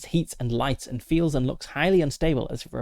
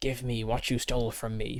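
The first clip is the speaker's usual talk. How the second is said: angry hissing, much quieter; 5 dB quieter than usual. Game narrator voices an angry spirit confronting the player: hissing angry spirit. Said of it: "it hisses at you".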